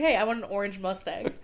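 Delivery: plain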